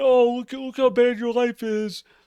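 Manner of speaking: mock-condescending, talking down. Explaining their anger by acting out someone talking down to you, mock-condescending. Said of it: "always talking down to you".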